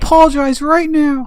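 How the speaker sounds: very loud, high, booming shout. A player's character, voice magically amplified, demands the kids apologize: magically booming voice. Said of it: "cast thaumaturgy to make my voice boom".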